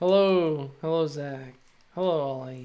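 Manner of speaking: dead-sounding, flat tone. Greeting stream viewers by name, with a dead-sounding greeting. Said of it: "All my greetings sound very dead".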